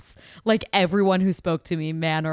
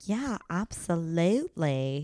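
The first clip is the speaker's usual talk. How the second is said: put-on British-sounding accent, spoken more quietly; 5 dB quieter than usual. Retelling a reply to being asked about love again: imitating Tia in a British-ish accent. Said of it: "that was British or something".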